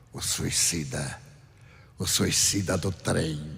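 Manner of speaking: slow, raspy, hoarse voice. Retelling what a figure with a mangled face said: imitating a hoarse voice. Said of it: "falou com uma voz rouquenha".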